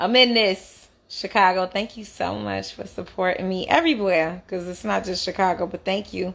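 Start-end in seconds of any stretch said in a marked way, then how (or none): none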